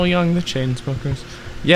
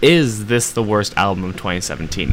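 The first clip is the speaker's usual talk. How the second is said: normal talking voice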